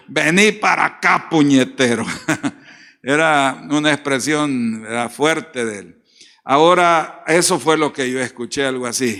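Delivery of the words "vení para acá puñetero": mock fierce, angry scolding call. Quoting the father-in-law's favorite word to his children, imitating an angry father-in-law. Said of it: "esa era la palabra de mi suegro".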